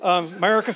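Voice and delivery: put-on Texas-style accent, put on. Talking about Americans and salvation, saying 'America' in a George Bush accent. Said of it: "I don't know why I say it with a George Bush accent".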